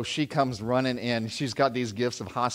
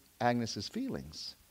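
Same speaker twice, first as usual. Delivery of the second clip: ordinary talk, nothing marked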